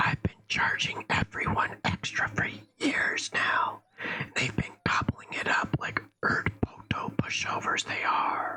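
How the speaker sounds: secretive, furtive, hushed whisper. Reading a story where the old herbalist confesses: furtive whisper. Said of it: "In a furtive whisper".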